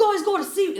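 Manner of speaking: terrible put-on New Zealand accent. Retelling a guy who came up to the group, in the worst New Zealand accent. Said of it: "That was the worst New Zealand accent ever".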